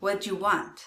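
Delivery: fast, casual, run-together speech. Demonstrating how a question sounds said quickly, fast casual speech. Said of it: "when I say them more quickly".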